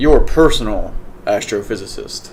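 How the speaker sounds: plain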